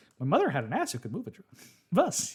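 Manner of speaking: put-on fast, cheery, excited talk with upward lilt. Retelling a character's line: imitating a happy-go-lucky delivery. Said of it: "it's like this happy-go-lucky".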